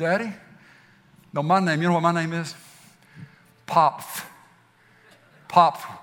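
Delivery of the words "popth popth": mock child voice with imitated lisp. Speaker repeats the name a little kid calls him; imitating a kid's lisp. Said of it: "He's got a little bit of a lisp".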